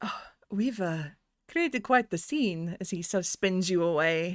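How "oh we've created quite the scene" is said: quiet half-whisper under the breath, spoken close. Storyteller's character pulls you close against his chest and spins you, half-whispered. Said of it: "And he whispers".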